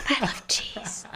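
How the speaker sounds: hushed, soft, breathy whisper. Joking about whispering a confession over the interviewer: whispering. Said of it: "me whispering it over you".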